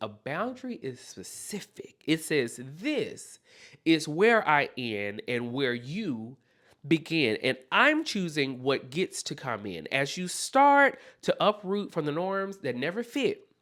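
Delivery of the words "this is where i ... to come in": plain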